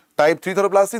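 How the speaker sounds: three said with a rising, doubtful questioning tune. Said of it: "This is type four thyroplasty".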